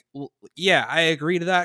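normal talking voice

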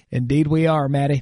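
acted flat delivery. Recalling being called a true Southern gentleman, retelling a deadpan reply. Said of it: "Response, deadpan".

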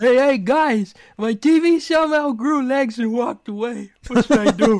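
very loud, high-pitched cartoonish voice, near yelling. Answering the live chat, the speaker reads a quick line in his Brack voice. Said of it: "I can read his Brack real quick".

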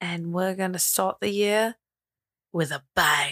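put-on British accent. Wrapping up the episode, a host teases the coming year in a Bond-like voice. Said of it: "Is that like supposed to be Bond-like?".

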